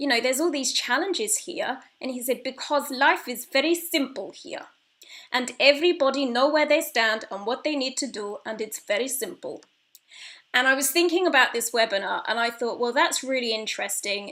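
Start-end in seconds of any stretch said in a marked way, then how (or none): 2.4-9.6 bad, clumsy put-on Bulgarian accent, laid on. Retelling a conversation, quoting the other man's reply in a bad Bulgarian accent. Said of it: "Excuse my bad Bulgarian accent".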